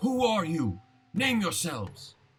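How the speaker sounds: furious, angry voice, high and swooping. Voicing an enemy who looks back at the party: angry in character. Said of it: "pissed at you guys".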